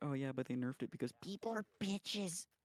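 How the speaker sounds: put-on, mimicked sassy voice. Retelling what a friend since high school always says, sassy imitation of a friend. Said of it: "In that exact voice. ... He's a sassy motherfucker".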